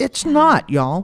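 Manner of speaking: Texan-sounding speech. Warning young people about HIV, the speaker slips into a Texan accent. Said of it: "You sounded very Texan there".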